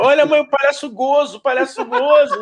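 mock very high, swooping, thrilled child's shout. Retelling a child in a shop calling to his mother, imitating a child shouting excitedly. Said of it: "começou a gritar alucinado, feliz na loja".

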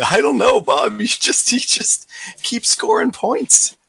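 mock laughing while talking. Retelling a moment watching football together, imitating Luke laughing while talking. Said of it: "him just like laughing, going".

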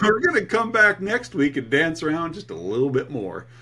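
full, swooping put-on Texan accent. A show co-host talking to the other host, going texan. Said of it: "You're going Texan on me".

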